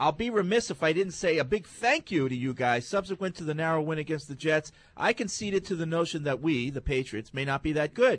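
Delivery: ordinary delivery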